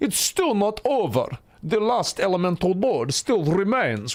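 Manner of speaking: put-on Russian accent. After a tough fight, addressing the boys, in a put-on Russian accent. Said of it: "with my perfect Russian accent".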